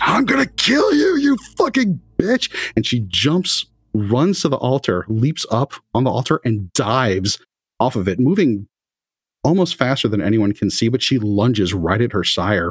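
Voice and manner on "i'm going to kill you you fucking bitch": furious, enraged yell, very high-pitched and shrill. Voicing a character whose face is contorted in rage at her sire: enraged shout. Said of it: "her face is just contorted in rage".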